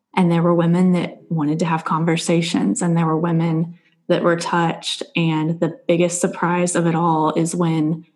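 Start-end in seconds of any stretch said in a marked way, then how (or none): none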